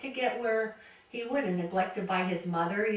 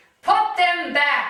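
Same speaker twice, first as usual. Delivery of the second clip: very loud, booming, raised, drawn-out voice; 7 semitones higher, 11 dB louder than usual. Recalling what he said in the supermarket, imitating a really loud voice. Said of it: "in this really loud voice".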